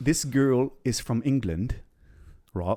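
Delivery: put-on, failed British accent drifting European. Podcast host introduces a listener's story about a girl from England; attempted British accent. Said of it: "was that supposed to be a British accent?".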